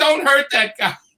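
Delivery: mild, half-shouted, pleading yell. Recounting what the whole neighborhood shouted at him, retelling a crowd yelling. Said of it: "They were all yelling at me".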